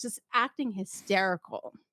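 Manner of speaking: normal talking voice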